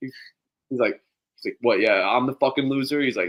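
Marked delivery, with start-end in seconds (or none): 1.6-3.0 put-on angry, pissed-off rant. Retelling a video of a blackjack dealer being chirped in chat: imitating an angry dealer. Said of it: "the dealer gets, like, pissed off".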